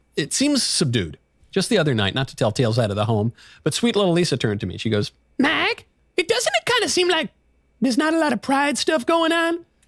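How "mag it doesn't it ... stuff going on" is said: very high woman's voice. Retelling what Lisa said to him one night, imitating Lisa. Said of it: "Is that the voice you do for your wife?".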